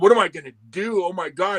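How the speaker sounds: mock, acted-out hysterical crying and sobbing. Retelling what a crushed man said at his truck, imitating hysterical crying. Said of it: "he's fucking crying hysterically".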